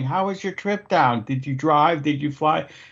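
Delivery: mild, overdone half-yelled voice. Retelling a woman greeting a guest across an open kitchen, retelling her yelling. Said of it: "I'm fucking yelling".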